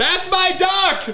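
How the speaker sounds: acted very high shout at full lung power. Retelling what a sleeping person shouted as loud as he could: imitating Ryan yelling. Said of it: "as loud as he could".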